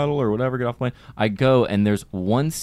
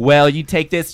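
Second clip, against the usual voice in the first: put-on sassy woman voice, higher, louder; 5 semitones higher, 6 dB louder than usual. Retelling what a woman on the phone said: imitating a sassy woman.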